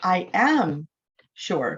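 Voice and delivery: "am" hit hard, emphatic stress. Explaining emphatic english, stressing the auxiliary verb: stress on am. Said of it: "you break it, and you stress on the auxiliary verb".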